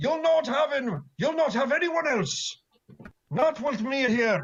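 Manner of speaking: loud, high-pitched, shouted rallying battle cry. Seeing the party in trouble, Duncan careens around the corner, crying out loudly. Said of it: "cries out in a loud voice".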